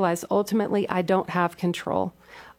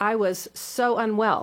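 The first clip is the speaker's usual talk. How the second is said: ordinary delivery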